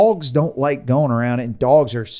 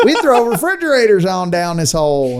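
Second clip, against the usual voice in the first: put-on pitched-up Southern US accent; 3 dB louder than usual. Telling a story about people dumping trash in a hole, you act out their excuses. Imitating a Southern accent. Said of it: "I don't know why I have Southern accents".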